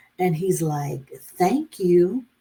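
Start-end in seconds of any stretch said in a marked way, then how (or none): 1.4-2.2 put-on shy, bashful small child's voice. Retelling how the couple's son in the back seat thanked her, imitating a bashful boy. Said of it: "he's being all bashful".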